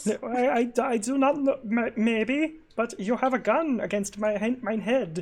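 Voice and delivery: put-on German-sounding alien accent, every word dragged. Voicing a kidnapped alien held at gunpoint: German-sounding alien accent. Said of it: "it's not a bad German accent".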